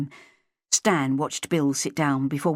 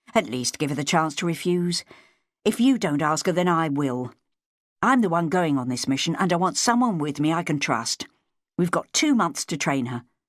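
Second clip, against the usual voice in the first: ordinary delivery, nothing marked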